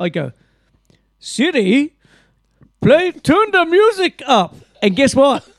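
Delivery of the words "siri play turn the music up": slow, high, deliberate put-on Indian accent. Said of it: "Why were you Indian?".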